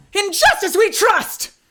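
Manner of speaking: voice cracking. Actor voicing a character hurrying off to a yokai attack, voice cracking. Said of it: "Did not mean to make his voice crack".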